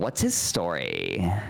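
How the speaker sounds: put-on, drawn-out influencer vocal fry. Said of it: "how he draws out the vocal fry".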